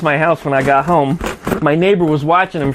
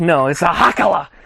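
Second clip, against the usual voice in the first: heavy, slow, thick put-on German accent. Retelling what a grandmother called her little garden rake: imitating grandmother's thick German accent. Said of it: "with her thick German accent".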